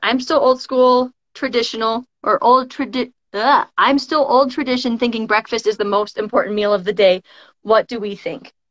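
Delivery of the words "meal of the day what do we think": ordinary talk, nothing marked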